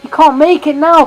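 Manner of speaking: high, loud, frantic commentator voice. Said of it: "I'm going absolutely mental here".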